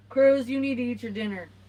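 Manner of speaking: very loud, high, bossy mom voice. Asked by a viewer to tell Cruz to eat supper: Boss Mama voice. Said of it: "Can you use the Boss Mama voice".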